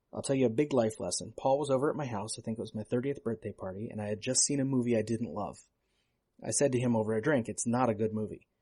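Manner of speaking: plain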